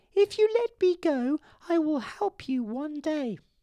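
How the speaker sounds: very high, squeaky little mouse voice. Narrator reading a fable, the mouse speaking to the lion, squeaky mouse voice. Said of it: "the mouse squeaked".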